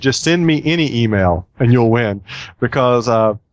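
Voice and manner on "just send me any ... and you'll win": ordinary talk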